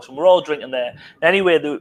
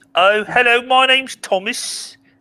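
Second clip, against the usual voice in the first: put-on high-pitched Midlands accent; 9 semitones higher than usual. Trying a Midlands accent while greeting others: Midlands accent imitating Thomas. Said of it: "he's from the Midlands".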